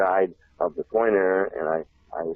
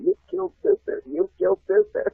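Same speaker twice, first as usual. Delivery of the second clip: very high, raspy, rough schoolkid shriek. Retelling how all the kids in the class reacted: imitating kids screaming. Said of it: "all the kids screaming".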